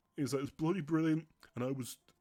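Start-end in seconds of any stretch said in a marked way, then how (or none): 0.5-1.3 mock heartfelt, emotional, overcome, moved exclamation. Retelling what a man in the cinema said to his son, imitating an emotional man. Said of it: "I saw this guy was emotional".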